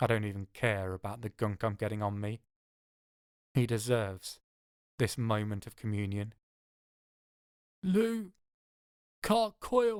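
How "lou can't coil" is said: very high pained rasp, each syllable rasped out. A man in obvious pain answers the narrator; rasping out each syllable. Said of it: "He rasps out each syllable despite the obvious pain".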